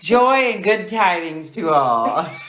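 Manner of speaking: thoroughly, heavily sarcastic, dripping with sarcasm. Signing off a chat about sharing stories on the podcast, very sarcastic. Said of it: "She says very sarcastically".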